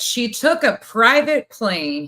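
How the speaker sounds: heavy, loud, drawn-out mocking sarcasm. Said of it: "So a lot of this is sarcasm".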